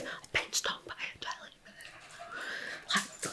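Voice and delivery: very quiet, slow, drawn-out hushed whisper. Retelling telling a companion about a jellyfish sting: imitating own past whisper. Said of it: "whispering to the guy that I'd gone with".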